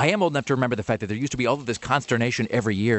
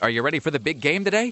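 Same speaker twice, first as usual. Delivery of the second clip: put-on sly, teasing, mocking tone; 4 semitones higher than usual. Speaker retelling a question someone asked them that morning, retelling a mocking question. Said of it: "sort of mockingly".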